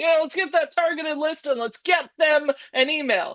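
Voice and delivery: high, dripping, heavily sarcastic voice. Speaker mocks the reply they got to a single question, sarcastic mimicry of a reply. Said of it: "I'm being very sarcastic there".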